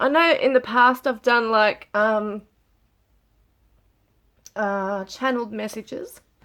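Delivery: tearful, choked-up speech while crying. Speaker struggling to get it together mid-talk, crying while talking. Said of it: "These tears won't stop".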